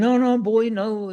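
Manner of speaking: high-pitched, lovely West Country burr.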